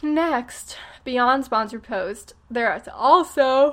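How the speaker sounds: words pushed out in the middle of a yawn. Explaining sponsored posts and affiliate sales, the speaker yawns mid-sentence: yawning. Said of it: "I'm yawning".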